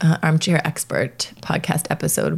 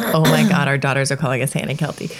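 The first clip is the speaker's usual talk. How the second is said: usual speaking voice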